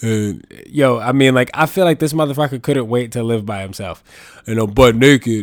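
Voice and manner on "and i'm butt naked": put-on deep gravelly voice, louder. Retelling what the brother said on the phone: imitating brother's deep gravelly voice. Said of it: "I'm gonna do an impression of him".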